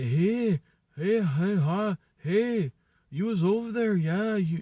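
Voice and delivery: put-on Canadian-like accent. Describing a woman's accent that recalled Canadians, in a put-on Canadian-like accent. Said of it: "the kind of like the accent of like".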